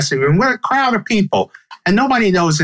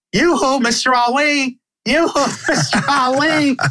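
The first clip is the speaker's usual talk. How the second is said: very slow, high, stretched-out hollering yell, acted out; 8 semitones higher than usual. Retelling how his mom called out to Mr. Ali, retelling mom yelling. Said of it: "she starts yelling".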